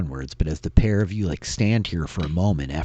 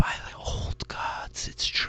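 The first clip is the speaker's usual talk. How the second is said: faltering, hesitant, hushed whisper. Storyteller voices figures pausing hesitantly in the courtyard, peering in, whispering. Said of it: "you hear this whisper like".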